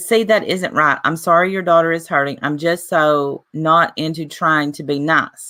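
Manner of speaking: ordinary talk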